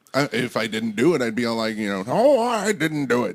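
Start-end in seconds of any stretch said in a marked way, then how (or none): 2.0-3.3 slow, high, loud, drawn-out gold-miner voice. Imitating Bill Cosby denying an accusation: Bill Cosby impression. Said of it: "that's my Cosby impression".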